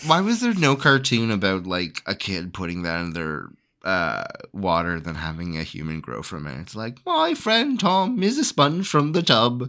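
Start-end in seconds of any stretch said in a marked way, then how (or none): 7.1-9.7 fake British accent, higher and quieter. Acting out a line from an imagined cartoon: put-on British accent. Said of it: "Why was it a British cartoon?".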